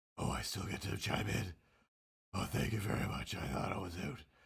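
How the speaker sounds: raspy put-on superhero voice. Chiming back in after thinking the voice was done: raspy Batman voice. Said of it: "this voice is just so raspy that it hurts".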